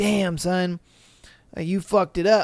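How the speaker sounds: ordinary delivery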